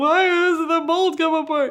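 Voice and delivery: tearful crying voice. Retelling nights alone with a mold that would not come apart: imitating own past crying. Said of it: "spent a lot of nights by myself crying".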